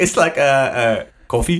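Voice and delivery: slow, put-on French accent on English words. Mocking people who say English words in a French accent, fake French accent. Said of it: "English words but with a French accent".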